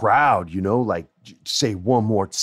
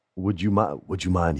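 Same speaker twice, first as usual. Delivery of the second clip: put-on British accent; 2 semitones lower than usual. Retelling a wrestler's polite request to the class: William Regal British accent. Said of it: "he has this great British accent".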